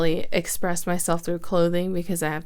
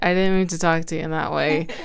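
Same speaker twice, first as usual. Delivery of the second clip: ordinary talk, nothing marked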